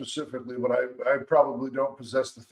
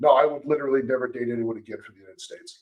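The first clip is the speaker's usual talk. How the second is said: ordinary delivery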